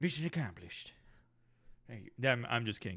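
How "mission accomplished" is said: put-on Texan accent. Continuing the impression after praise: George W. Bush accent. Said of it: "my George W. Bush accent".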